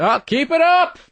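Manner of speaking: very high-pitched, drawn-out, sarcastic tone. Imitating the old neighbor heard through the floor: imitating sarcastic neighbor. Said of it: "he's really sarcastic".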